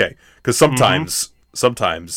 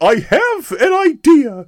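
very high-pitched, slow, squeaky cartoon voice; 4 dB louder than usual. Retell what Gifford said in the group chat, in kind of a Mickey Mouse voice. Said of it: "He does kind of sound like Mickey Mouse".

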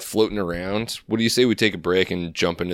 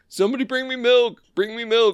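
piercing, shrill, very high scream; 3 dB louder than usual. Retelling a protester sprayed with mace: imitating Baked Alaska screaming for milk. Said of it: "screaming for milk".

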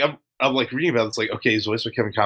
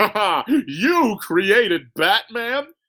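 very slow, high, drawn-out cartoon villain cackle; 10 semitones higher than usual. Retelling a story of a comic book villain reacting to a hero's origin, in a cackling cartoon villain voice. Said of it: "that Joker impression was spot on".

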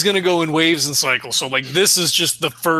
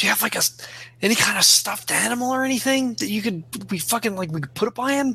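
loud, high, hushed stage whisper that carries; 5 semitones higher, 5 dB quieter than usual. Voicing a character asking another for a stuffed animal: stage whisper. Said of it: "stage whispers".

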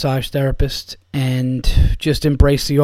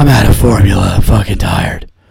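gruff, superhero-style voice; 6 semitones lower, 6 dB louder than usual. Acting out a joke about a tired superhero: Batman voice. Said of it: "That fucking voice".

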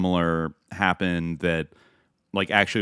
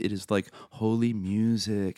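put-on American accent, quieter; 2 semitones higher, 4 dB quieter than usual. Imitating an influencer woman in Israel: American accent impression. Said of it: "she was, like, totally American".

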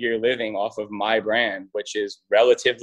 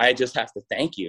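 mock hysterical sobbing, tearful. Retelling a client thanking the speaker, imitating someone crying hysterically. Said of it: "she starts hysterical crying".

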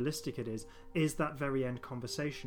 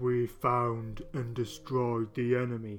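strange, loud, bellowed put-on creature voice; 5 dB louder than usual. Recreating a scene from Day of the Daleks: Ogron voice. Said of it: "you got the Ogon just going".

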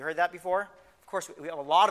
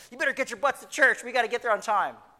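play-acted, pitched-up hollering yell; 7 semitones higher, 3 dB louder than usual. Retelling jumping in while everyone yelled at each other: imitating own yell. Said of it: "I yell".

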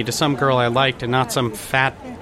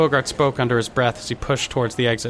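plain

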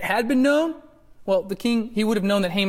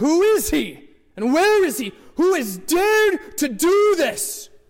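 very high, slow, drawn-out, furious voice; 9 semitones higher, 4 dB louder than usual. Reading the verse where the king speaks to Queen Esther: furious King Ahasuerus voice. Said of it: "I imagine sounding something like that. He's furious".

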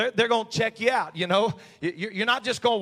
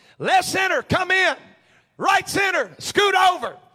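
very high, shrill preacher-style hollering; 10 semitones higher, 6 dB louder than usual. Retelling how dad placed fielders from the pitcher's mound, imitating dad hollering. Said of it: "My dad would start hollering".

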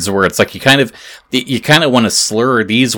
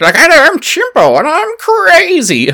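dim-witted put-on puppet voice, much higher pitch; 4 dB louder than usual. Demonstrating a ventriloquist's monkey puppet, in a stupid-sounding Chimpo voice. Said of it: "Chimpo sounding stupid".

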